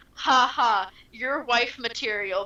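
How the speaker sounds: playful mock-joking tone. Describing a crew member who comes up to you, retelling a man's joking line. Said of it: "he's just he's like jokingly like".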